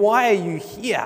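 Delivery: taunting, scornful, mocking voice. Narrator gives Satan's words to someone standing before God, in a mocking voice. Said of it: "the Satan's mocking voice saying".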